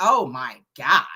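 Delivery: put-on California Valley girl accent, dropped low. Recounting a woman's reply to your greeting, in her Valley girl voice. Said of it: "like in her Valley voice".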